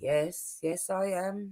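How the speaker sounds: mock calm, soft, level, toneless monotone. Retelling a scene, a speaker mimics a woman answering an accusation, imitating a calm, flat reply. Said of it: "flat tone voice".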